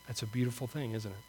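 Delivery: slightly choked-up voice with a small catch. Finishing a sermon about the wonder of salvation, a little choked up. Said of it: "Gets me a little choked up".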